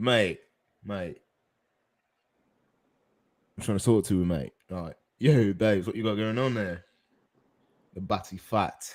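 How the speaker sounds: put-on British street accent. Among friends, one keeps doing uk voices until another objects: fake uk accent. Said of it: "We ain't doing the UK voices tonight".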